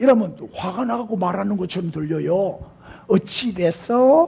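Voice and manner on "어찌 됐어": gentle, soft rising tune at end of 됐어. Showing how to ask without sounding angry: soft rise on 됐어. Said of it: "이렇게. 끝을 좀 올려줘. 부드럽게".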